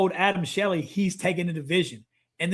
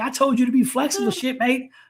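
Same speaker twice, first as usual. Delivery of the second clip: irritated, pissed-off angry scolding, pitched up; 6 semitones higher than usual. Retelling a phone call from an angry Master Chief: imitating someone pissed off. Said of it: "this dude calls me and he's pissed".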